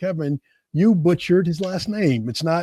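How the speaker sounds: normal talking voice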